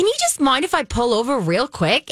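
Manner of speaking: high, swooping, sing-song, exaggerated Australian accent. Retelling a scene where a driver asks to pull over: imitating Jillian G's Australian accent. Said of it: "she has this Australian accent, and she goes".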